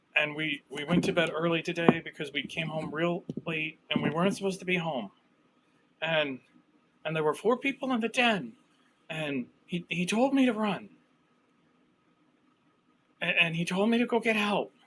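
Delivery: shaken, frightened, stammering character voice. Voicing a girl, after a deep breath, telling of people in the den: shaken girl recounting attack. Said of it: "And she takes a deep breath. She goes".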